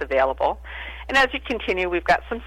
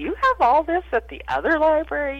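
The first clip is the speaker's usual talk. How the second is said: much higher pitched voice. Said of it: "they'll say".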